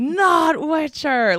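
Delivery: high, slow, stretched-out mock fussy whine. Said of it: "people are like".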